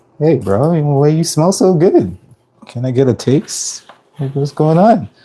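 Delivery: high voice for a dog. Retelling how dogs in the elevator react to the food smell: voicing a dog. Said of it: "somebody walk in with their dog, it's just like".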